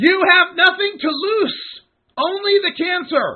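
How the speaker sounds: shouting. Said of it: "so understand that I have to yell this".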